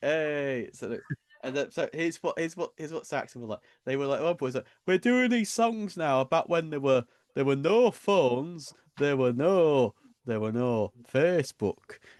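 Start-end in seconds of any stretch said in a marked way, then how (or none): 4.2-12.0 exaggerated, heavy Yorkshire accent, loud and high. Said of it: "I'm over exaggerating the Yorkshire accent here".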